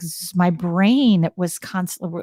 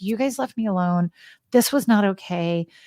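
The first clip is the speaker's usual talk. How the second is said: ordinary talk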